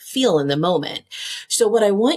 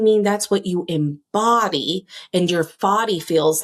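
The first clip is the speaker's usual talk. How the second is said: ordinary delivery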